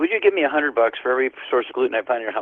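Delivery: plain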